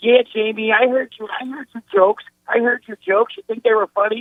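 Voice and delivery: very high-pitched, confrontational voice. Retelling a stand-up bit where a boxer confronts a comedian: high-pitched Mike Tyson voice. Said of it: "Mike Tyson went into that whole high pitch".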